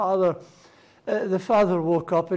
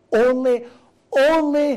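stressed "only", much higher and louder; 6 semitones higher, 5 dB louder than usual. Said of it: "The emphasis is on the only".

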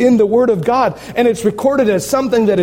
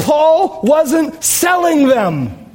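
slow, high-pitched, intensely fired-up delivery. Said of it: "Sorry, I'm fired up".

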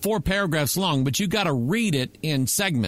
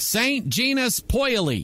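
American accent, Americanized pronunciation, pitched up; 7 semitones higher than usual. Reading the name of a French town near CERN, American accent. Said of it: "I'm going to read it in American".

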